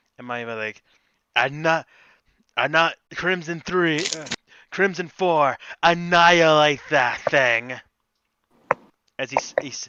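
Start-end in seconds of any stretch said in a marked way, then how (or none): 4.7-7.8 dark, ominous voice. Giving an order to Crimson Four in character: dark voice. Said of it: "with a bit of a dark voice".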